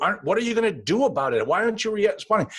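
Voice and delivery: high, fast, exasperated delivery.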